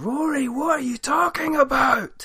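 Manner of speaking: put-on exasperated, fed-up yell at very high pitch. Retelling screaming at Facebook over someone's posts, retelling screaming. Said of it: "I'm just screaming at Facebook".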